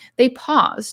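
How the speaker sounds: plain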